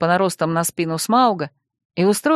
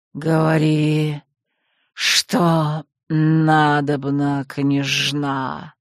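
low, hissed words in huge serpent voice; 5 semitones lower than usual. Narrating a story, a huge serpent speaks to the princess, hissing. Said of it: "прошипел он".

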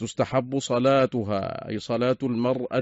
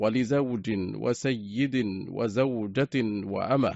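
plain

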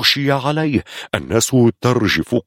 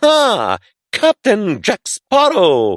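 very high, sneering, haughty, mocking, arrogant drawl; 11 semitones higher than usual. A stranger, ordered by a soldier to give his name, answers with mocking arrogance. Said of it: "ناظرا بشيء من التعالي الساخر".

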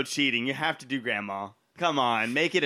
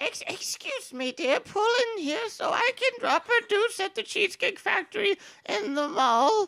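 put-on very high little old grandma voice. Speaker taking a turn doing a line the way their grandma sounds, grandma voice. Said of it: "the next one is going to be grandma".

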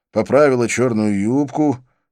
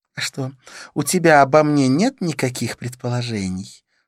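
smiling delivery; 4 semitones higher than usual. Narrator reads Kavita turning the question back on the narrator, asking with a smile. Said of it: "с улыбкой поинтересовалась Кавита".

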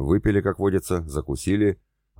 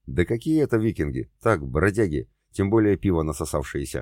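ordinary delivery

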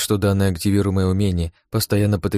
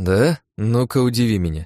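plain reading voice

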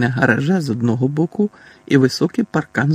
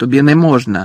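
blurted out immediately; 5 dB louder than usual. A boy blurts it out at once when his brother takes out a wand. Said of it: "відразу бовкнув Дадлі".

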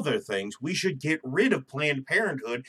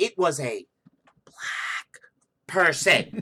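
whispered, stretched out very slowly. Describing how people whisper someone's ethnicity mid-conversation, imitating someone whispering. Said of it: "If someone whispers the ethnicity".

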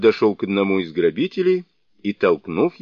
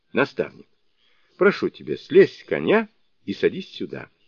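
ordinary delivery

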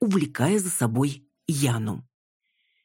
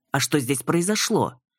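ordinary delivery

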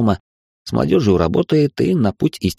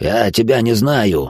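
growling snarl like a movie werewolf. Narrating a man in poor makeup trying to sound like a Hollywood werewolf, growling. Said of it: "прорычал он, стараясь подражать голосу вервольфов".

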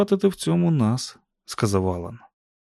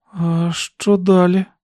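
scared, fearful, pitched-up voice; 6 semitones higher, 4 dB louder than usual. Reading a listener's frightened question about the plan; frightened. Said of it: "злякано запитала Сюзан".

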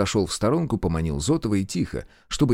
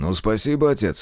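ordinary delivery, nothing marked

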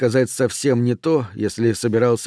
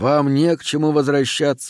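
usual speaking voice

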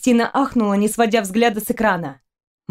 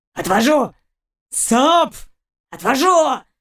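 rumbling, growling dog voice; 4 semitones higher than usual. Narrating a story, voicing the dog's lines: growled. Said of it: "прорычал пес".

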